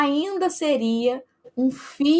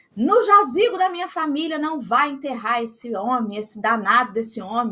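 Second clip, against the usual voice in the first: ordinary talk, nothing marked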